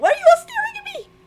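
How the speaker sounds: tiny, very high squeaky voice. Retelling a scene with Doctor Tori, the speaker quotes her in a squeaky voice. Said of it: "In like a squeaky voice".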